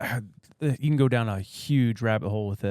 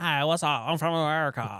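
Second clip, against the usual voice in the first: put-on Valley girl accent; 3 semitones higher than usual. Describing English people faking American accents, doing a put-on Valley accent. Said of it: "they do like the Valley".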